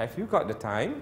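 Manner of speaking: rising pitch on time. Polite question example in an intonation lesson, rising pitch on time. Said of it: "It goes up".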